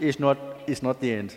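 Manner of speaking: loud, high-pitched Indian accent.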